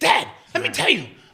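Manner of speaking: put-on very high, very loud little-kid voice. Imitating how the other speaker sounded as a kid: imitating him as a kid. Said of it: "it is how he was sounding as a kid".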